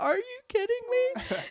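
acted-out very high squeal through hysterical laughter, disbelieving. Telling how she heard she was having twins, retelling her hysterical laughing. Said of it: "I was just hysterically laughing".

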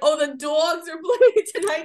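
put-on Jersey accent, "dogs" as "dawgs". Quoting how a woman said something, in a New Jersey accent. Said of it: "they're like from Jersey".

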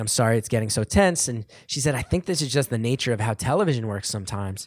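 ordinary talk, nothing marked

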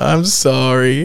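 put-on, acted cute voice. Retelling apologizing to an angry man with head hung: retelling acting cute. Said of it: "So you try to be all cute".

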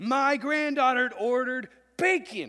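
very loud, very high, shrill, piercing scream. Acting out a grandmother screaming from her car, retelling a scream.

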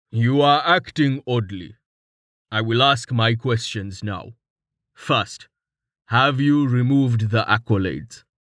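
rumbling character voice. Narrator reads a scene, Tallheart speaking to Rain, Tallheart rumbling. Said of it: "Tallheart rumbled".

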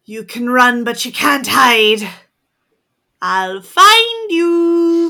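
loud, werewolf-like yell. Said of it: "I'm gonna yell out".

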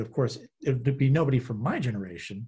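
ordinary talk

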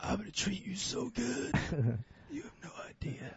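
breathy, hushed, raspy near-whisper. Hosts joke about phone lines; speaker plays the woman answering, raspy smoker's voice. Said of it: "Raspy voice".

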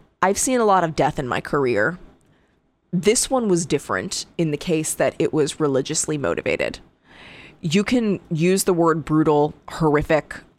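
ordinary talk

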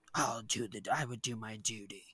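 soft, stern tone. Retelling a scene where a child accepts a betrothal: stern Aemond voice. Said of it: "it's a very stern, small child".

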